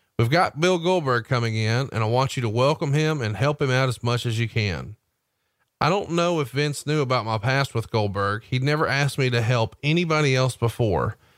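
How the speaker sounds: ordinary talk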